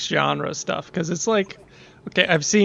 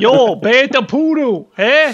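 put-on Boston accent with higher pitch; 7 semitones higher, 8 dB louder than usual. Joking about a Star Wars alien race, saying alien words: Boston accent in Huttese. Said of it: "it's a Boston accent, but, in a Huttese language".

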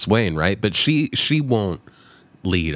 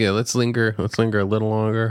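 usual speaking voice

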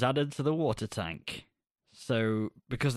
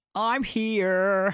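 Broadway voice, much higher and louder; 8 semitones higher, 5 dB louder than usual. Retelling how someone answered after being summoned, in a theatrical Broadway voice. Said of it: "that was a very Broadway".

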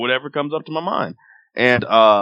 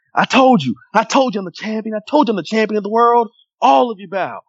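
play-acted, very high-pitched yell; 10 semitones higher than usual. Acting out how he told everyone he was the champion, retelling a yell. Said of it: "He yelled it".

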